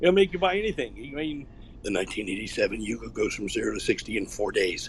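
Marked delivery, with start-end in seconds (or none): 1.8-4.9 very low, cool car-commercial announcer voice. Interview guest showing off the voice as a mock car ad: Gabe Logan car-commercial voice. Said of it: "it's the cool car commercial voice".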